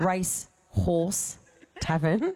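unhurried, slow, drawn out. The speaker repeats a tour venue's name so it is heard right, said slowly. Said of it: "You've got to say that slowly".

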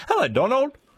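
high, enthusiastic, eager delivery.

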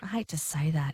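soft whispered aside.

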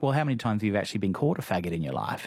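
normal talking voice

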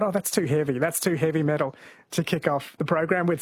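usual speaking voice

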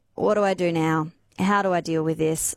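ordinary talk, nothing marked

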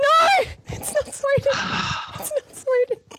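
exasperated shout, high-pitched, full of disbelief.

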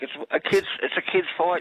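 high-pitched, exasperated outburst blurted out.

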